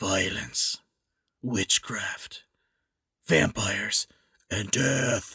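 very low, dark superhero-style voice. Talking about vampire bats with the other speaker, in a Batman voice. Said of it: "You sound like Batman".

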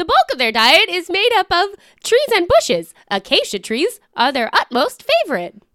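put-on annoying, robotic device voice. Reading out giraffe facts one after another: Pokedex voice. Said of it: "You sound like a more annoying Pokedex".

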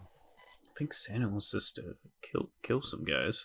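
hushed whisper. During a role-play, leaning aside to partners, whispering. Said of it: "I was whispering to my partners here".

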